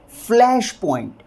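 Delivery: flash point with stress on flash. Pronunciation lesson repeating the term, stress on flash in flash point. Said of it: "stress जब फ वाली sound के ऊपर आएगा तो हम इसे किस तरह से प्रोनाउंस करेंगे?".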